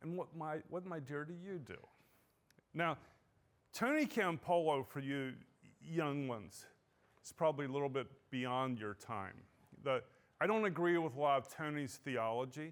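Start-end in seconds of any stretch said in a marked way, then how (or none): 0.0-1.8 soft, patronizing, condescending talking-down tone. Retelling a woman at a university party questioning a stay-at-home mom, mimicking a condescending voice. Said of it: "in a condescending voice".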